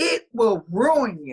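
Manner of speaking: acted-out furious, scolding tone. Retelling own words from a dream: retelling a furious warning. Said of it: "but I was furious".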